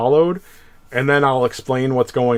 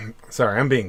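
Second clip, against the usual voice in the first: ordinary delivery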